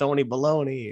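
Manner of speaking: put-on muttering under the breath. Retelling a joke said to a coworker, imitating muttering under breath. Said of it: "kinda under my breath".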